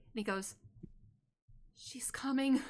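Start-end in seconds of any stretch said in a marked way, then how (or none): 1.7-2.6 absolutely terrified, frightened-sounding voice. Game master voicing a character who looks to a player: terrified. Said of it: "he looks absolutely terrified".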